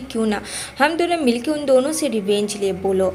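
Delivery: ordinary delivery, nothing marked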